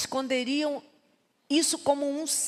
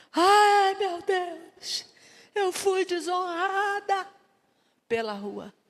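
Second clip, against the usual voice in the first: mock tearful, high, sobbing wail, cried out; 5 semitones higher than usual. Telling the story of King David's daughter, acting out her cry: retelling a loud crying wail. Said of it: "gritando, chorando, em voz alta".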